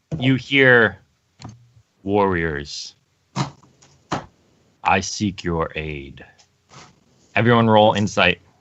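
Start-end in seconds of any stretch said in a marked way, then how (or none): 2.0-6.2 very low, slow, deliberate, hushed voice. Game master voicing a speaker the players hear, in a low voice. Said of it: "It's low".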